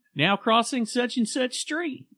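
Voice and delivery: put-on Oklahoma accent, pitched very high. Recalling a crossing signal's announcement, imitating it in an Oklahoma accent. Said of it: "it was in an Oklahoma accent".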